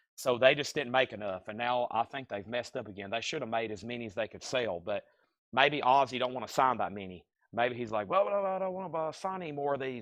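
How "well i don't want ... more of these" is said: complaining, grumbling voice, pitched a bit higher. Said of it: "my impersonation of [name] complaining about signing box sets".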